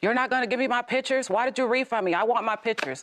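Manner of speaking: half-yelled, high pitch. Recounting how the daughter yelled when she answered the call, imitating someone yelling. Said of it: "she's yelling".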